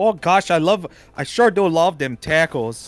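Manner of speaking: mock Minnesotan way of talking. Joking in a group about people out in minnesota, minnesota accent. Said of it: "accent happen?".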